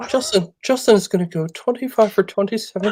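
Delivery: put-on English accent. Mimicking another speaker's stat predictions: put-on English accent. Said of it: "are we English now, too?".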